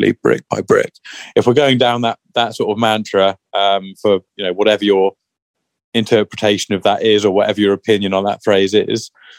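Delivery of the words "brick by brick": very soft, gentle, hushed, said under the breath. Quoting a mantra while discussing a long-term plan: said very softly. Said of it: "I'm gonna say it very softly".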